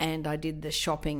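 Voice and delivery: ordinary talk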